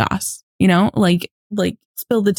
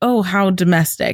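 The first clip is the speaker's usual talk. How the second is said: put-on disdainful, scornful tone. Recapping a scene where Buck comes home to find laundry: retelling with disdain. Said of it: "says with disdain".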